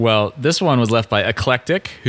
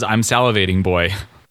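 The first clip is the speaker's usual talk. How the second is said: put-on salivating, run straight into boy, boy dropped low. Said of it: "it literally says".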